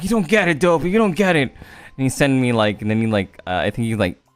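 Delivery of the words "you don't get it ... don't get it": put-on crying voice, sobbing.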